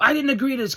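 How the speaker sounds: very high, frightened, indignant outburst. Retelling a wrestler's reaction to a match challenge: imitating someone scared and angry. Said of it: "scared and pissed".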